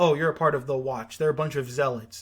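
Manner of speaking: ordinary talk, nothing marked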